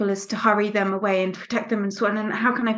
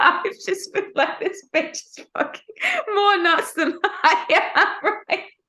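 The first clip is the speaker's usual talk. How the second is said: very high-pitched, laughing through the words; 10 semitones higher than usual. Thanking a friend for support and recalling funny moments, laughing while talking. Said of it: "I'm laughing because I'm just thinking".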